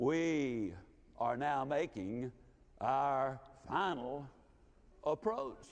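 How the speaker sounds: put-on deep, resonant voice. Retelling the aircraft captain's intercom announcement: imitating a deep resonant voice. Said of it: "in that deep, resonant voice said".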